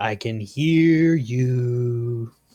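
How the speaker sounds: most menacing, threatening tone, drawn-out "you". Voicing your character hiding in the darkness to ambush a rat, in your most menacing tone. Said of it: "in my most menacing tone".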